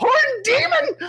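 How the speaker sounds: panicked, terrified, very high shriek. A storyteller voices a creature that catches a player's scent, screaming in terror. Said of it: "as it screams in terror".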